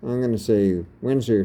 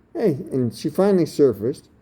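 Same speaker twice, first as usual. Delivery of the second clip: usual speaking voice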